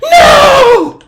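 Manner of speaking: piercing scream, very high and very loud. Voicing a priestess as she screams: screaming. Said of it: "Melith just screams".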